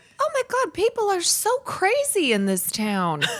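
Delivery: very high, swooping, slight southern twang. Retelling own earlier words, with a little southern twang. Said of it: "I put a little southern twang in my voice".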